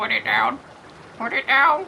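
croaking, birdlike voice. Voicing the bird Jasper, who keeps harrying a player, croaking Jasper voice. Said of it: "Jasper just croaks out like".

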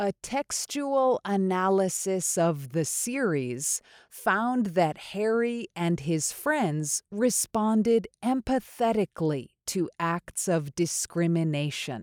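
slow, deliberate, clearly pronounced careful delivery. Repeating the sentence of the day for learners: a little slower. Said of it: "a little slower".

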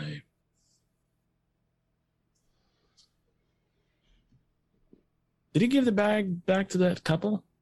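put-on whispery voice. Retelling how Keaton delivered a line, doing a soft whispered Keaton impression. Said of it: "Keaton just kind of like just kind of whispered a little bit".

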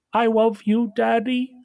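put-on tiny, high, very slow baby raccoon voice. Voicing the littlest baby raccoon telling its new dad: littlest baby raccoon voice. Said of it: "the littlest one just says".

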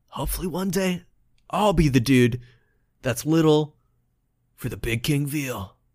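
quiet, soft speech under the breath. After high-fiving the player, the little dude says to himself, quietly to himself. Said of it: "he quietly says to himself".

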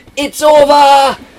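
shrill, very loud, high-pitched, jubilant shouting yell. Recounting how someone came through late in the season, retelling a shout. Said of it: "just shouting".

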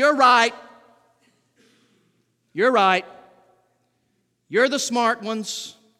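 scornful, heavy sarcasm. Preacher acts out Paul answering the Corinthian believers; retelling Paul's sarcasm. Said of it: "Paul very sarcastically says".

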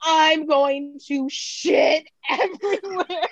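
stretched-out, urgent scream. Telling a story about finding no bathroom at a laundromat, retelling a scream. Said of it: "as I'm screaming".

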